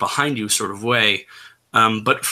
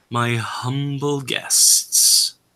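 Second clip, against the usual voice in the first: very low, drawn-out voice; 3 semitones higher than usual. Voicing a voice heard underneath a sound, greeting guests: very low, drawn voice. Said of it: "A very low, very drawn sort of voice".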